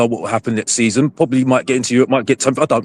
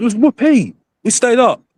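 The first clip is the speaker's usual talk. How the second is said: heavy sarcasm, very high pitch, very slow, drawn out; 10 semitones higher than usual. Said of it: "with sarcasm".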